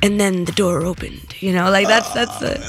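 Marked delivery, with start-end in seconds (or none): 0.0-1.4 audiobook narrator voice, lower pitch. Showing the other speaker their own version, an audiobook narrator voice. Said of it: "that's my audio book. Like, that's me being more like".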